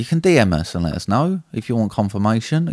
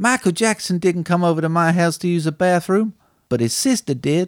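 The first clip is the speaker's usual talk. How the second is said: fake, put-on Japanese accent; 7 semitones higher than usual. Quoting a film line for a guessing quiz: put-on accent. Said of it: "Ignore that accent".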